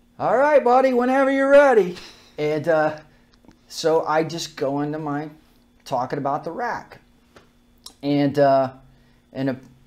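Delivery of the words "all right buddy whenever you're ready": shrill, very high, loud holler. Retelling someone calling from the back of the room: imitating someone yelling. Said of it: "yelling at, at me from the back of the room".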